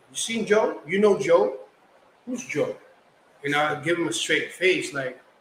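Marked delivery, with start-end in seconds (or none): 0.1-2.7 playful, joking, teasing, ribbing tone. Retelling how a person at the barbershop answered a question: imitating someone joking. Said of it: "he jokingly was like".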